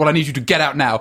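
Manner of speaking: mock-angry voice. Retelling an angry phone call, imitating angry Mr. North. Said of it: "he was angry. He's like".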